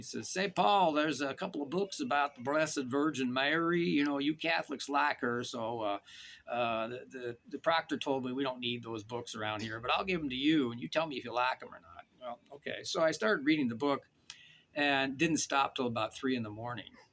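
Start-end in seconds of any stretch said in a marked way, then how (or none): 0.3-12.0 put-on Southern accent in Alabama style. Retelling a phone message from a Baptist minister friend: Augie Koistra's Southern accent. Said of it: "he has this wonderful Southern accent".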